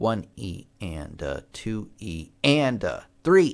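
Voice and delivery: stress leaned on "and" and "three". Showing how to count sixteenth notes: stress on and and three. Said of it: "put a little more emphasis on the and, and then that beat three".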